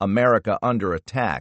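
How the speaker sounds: plain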